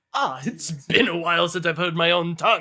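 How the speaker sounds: lifted with a little excitement, perking up. Voicing Rogi, who perks up at hearing his own tongue: Rogi voice, a little excited. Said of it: "shake his little T-Rex arms with a little bit of excitement".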